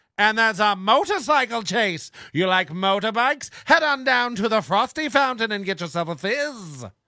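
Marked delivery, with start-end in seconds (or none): 3.7-6.9 put-on old-time 1940s radio announcer pitchman voice. Speaker slips into a 1940s radio announcer voice. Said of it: "now I'm stuck in forties radio guy voice".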